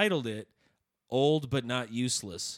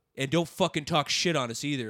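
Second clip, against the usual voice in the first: put-on aggressive man's voice, pitched higher; 3 semitones higher, 3 dB louder than usual. Retelling what an old man at a comedy show said: imitating an aggressive man. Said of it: "got real aggressive real fast".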